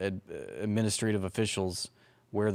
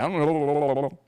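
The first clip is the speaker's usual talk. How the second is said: put-on stammer, higher and louder; 6 semitones higher, 6 dB louder than usual. Mocking a denial about shoes: imitating Marco Rubio stammering. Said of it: "stammering, stuttering".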